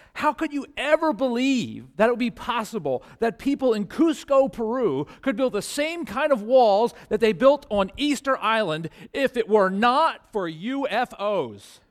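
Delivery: put-on fervent tv-scientist voice. Retelling a scientist in a UFO commercial; imitating his impassioned voice. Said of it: "with this impassioned voice".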